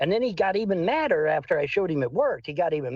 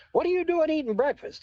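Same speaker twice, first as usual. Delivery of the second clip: put-on furious screaming, very high pitch; 10 semitones higher than usual. Retelling a man who interrupts his breakfast, retelling a man yelling. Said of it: "starts yelling and screaming".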